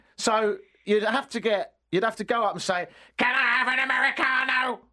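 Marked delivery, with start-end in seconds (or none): 3.2-4.8 put-on robot voice, much higher, louder. Speaker showing how customers would have to order, Dalek voice. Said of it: "Like that".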